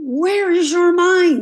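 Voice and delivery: mock sudden shout. Speaker reenacts a teacher suddenly shouting at a seated class, retelling a teacher's sudden shout. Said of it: "Just about like that, just shout".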